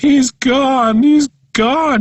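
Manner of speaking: very high, breaking, mournful, drawn-out bawling wail. Retelling a mother's distraught phone call about the lost cat: imitating someone bawling. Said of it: "she says, bawling".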